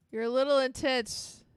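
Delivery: loud sarcastic jab.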